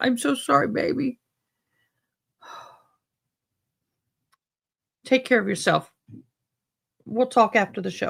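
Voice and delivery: crying talk. Saying sorry to Angela after hearing her news, crying while talking. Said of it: "Now I'm crying".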